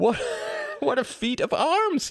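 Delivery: gasping, very high voice. A narrator reads a boy answering another boy in a group, gasping. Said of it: "gasped Tom".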